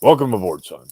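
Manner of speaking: loud bellowing voice like a base commander. Repeating the greeting for the host after naming the character, do a General Hammond impression. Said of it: "That's my general Hammond impression".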